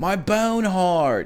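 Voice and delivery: high, put-on surfer dude voice. Fulfilling a commenter's request to say a phrase, put-on surfer voice. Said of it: "in his surfer voice".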